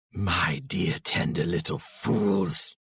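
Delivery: soft, breathy hiss with menace. Reading Grishnákh's line in the story, hissing Grishnákh voice. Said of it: "is having none of this. / He snarled. / hissed [name]. / he hissed".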